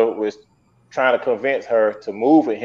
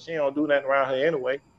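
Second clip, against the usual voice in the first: put-on mutter, higher and quieter; 3 semitones higher, 9 dB quieter than usual. Retelling a remark overheard during a phone call: imitating someone muttering under breath. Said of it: "she heard him say under his breath".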